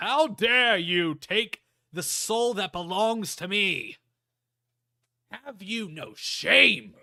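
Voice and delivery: very loud, booming, high, slow, drawn-out roar. A voice suddenly addresses the player characters: Rubuta's loud booming voice. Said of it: "you hear a loud booming voice go".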